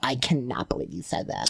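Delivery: soft, whispered mock outrage and disbelief.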